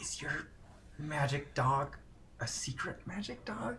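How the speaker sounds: slow, very soft, hushed, leaned-in whisper. Retelling leaning in close to Frankie to ask him: retold whisper to Frankie. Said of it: "I lean in close and I whisper to Frankie".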